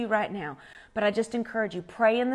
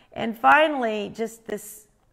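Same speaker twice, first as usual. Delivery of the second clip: ordinary talk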